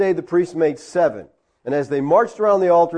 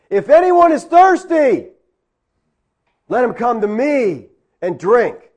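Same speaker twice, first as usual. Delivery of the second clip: mock loud shouted yell; 6 semitones higher, 5 dB louder than usual. Narrating the feast day when a voice from the crowd interrupts, retelling a loud yell. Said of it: "this loud voice yells out from the crowd".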